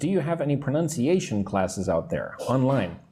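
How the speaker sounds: ordinary talk, nothing marked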